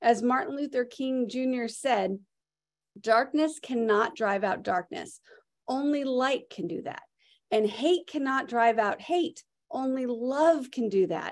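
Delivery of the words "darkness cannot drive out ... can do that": plain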